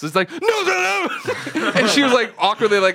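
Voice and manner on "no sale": quick, very high-pitched, rattled-off blurt. Retelling what was said while kicking a chair back, said really fast. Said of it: "I said it really fast".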